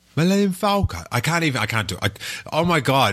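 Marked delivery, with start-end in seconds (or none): 0.1-1.0 put-on English robot voice, much higher. Host discussing a film scene, attempting a C-3PO voice. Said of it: "Did you hear that C-3PO voice?".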